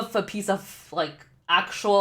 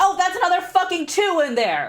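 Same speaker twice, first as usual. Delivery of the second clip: exasperated cursing yell, high and swooping; 10 semitones higher, 3 dB louder than usual. Finding another unwanted two while playing, frustrated yelling. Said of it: "I have to stop yelling".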